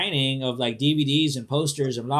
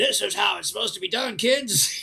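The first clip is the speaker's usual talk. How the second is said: put-on higher-pitched grumpy, crotchety old man voice; 5 semitones higher than usual. Joking about being strict with younger workers: put-on crotchety old dude voice. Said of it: "I'm that old crotchety dude going".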